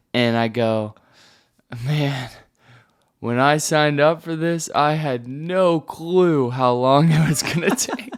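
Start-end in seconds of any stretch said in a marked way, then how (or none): 1.9-8.2 mock groggy drunk-sounding voice, higher. Retelling own words from a clip just after waking: imitating own drunk-sounding groggy voice. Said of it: "I sound like I'm drunk".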